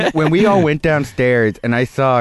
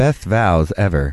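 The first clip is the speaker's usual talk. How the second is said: put-on radio voice, pitched much lower; 6 semitones lower than usual. Repeating someone's line when asked, in an NPR voice. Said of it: "do you want us to say that in an NPR voice?".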